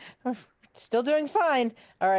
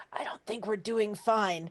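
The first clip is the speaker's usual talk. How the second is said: audible half-whisper, hushed stage whisper; 6 dB quieter than usual. Playing a character speaking to a companion mid-fight: half-whispering in character. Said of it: "but I still try to whisper".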